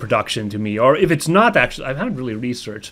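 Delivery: ordinary delivery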